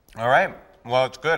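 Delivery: talking with mouth full. Tasting a dish someone made and answering while chewing, mouth full. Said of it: "I'm chewing".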